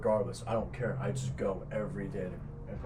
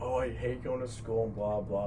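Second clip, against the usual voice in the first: ordinary delivery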